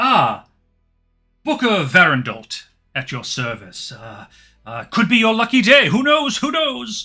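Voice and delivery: nervous merchant voice. Voicing a trader who looks around nervously: nervous merchant character. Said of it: "he looks around nervously".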